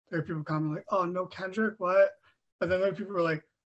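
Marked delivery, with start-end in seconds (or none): none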